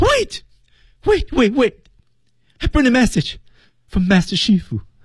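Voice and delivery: very high, tearful, terrified, rushed pleading. Acting a line as if just before getting beaten: frightened, pleading. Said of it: "就是要挨抽之前的状态啊".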